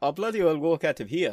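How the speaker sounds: terrible fake Scottish accent, very high and fast. Retelling a pub exchange with quoting mates after many pints, bad fake Scottish accent. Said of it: "the worst Scottish accent ever".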